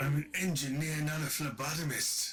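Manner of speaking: put-on Highland Scottish accent. Doing Scotty from Star Trek for the group, Scotty impression with Highland accent. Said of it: "says that's more Highland".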